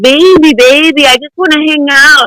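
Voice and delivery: put-on Russian accent. Retelling what a man said in the car: imitating a Russian accent. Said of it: "in that Russian accent".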